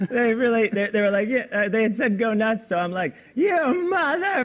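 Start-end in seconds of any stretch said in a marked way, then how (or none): 3.3-4.5 acted scream, much higher. Recounting being told to go nuts on a movie, retelling a scream. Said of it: "I'm screaming".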